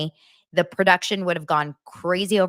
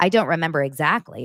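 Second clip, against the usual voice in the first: ordinary talk, nothing marked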